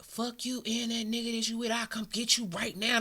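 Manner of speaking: unhinged, berserk, furious ranting outburst. Retelling what a caller said on the phone: imitating someone going berserk. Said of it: "Went berserko on the phone".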